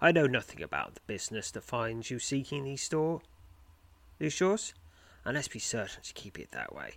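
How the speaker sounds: quick, hushed, hurried speech. Narrator voicing a man who directs the travelers to the portal: hushed, hurried voice. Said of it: "Speaking in a hushed tone and hurried voice".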